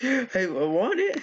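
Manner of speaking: put-on high, slow childlike voice.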